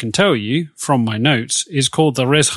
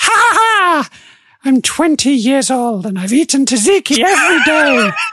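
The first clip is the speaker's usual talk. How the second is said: put-on very high old-woman cackle through the words; 13 semitones higher, 4 dB louder than usual. Retelling what an old woman said, the speaker does a cackling old woman voice. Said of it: "she looks at you and just cackles and goes".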